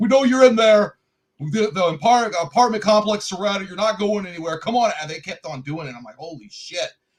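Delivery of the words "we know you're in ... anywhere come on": loud, high-pitched, aggressive screaming. Retelling cops banging on the neighbor's door, imitating them screaming at him. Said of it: "screaming at him like".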